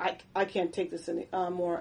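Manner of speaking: normal talking voice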